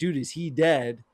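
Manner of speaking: normal talking voice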